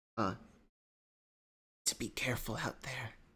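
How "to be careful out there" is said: soft, hushed half-whisper, kept quiet. Voicing a woman in her flat warning the party: half-whispering. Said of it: "She whispers".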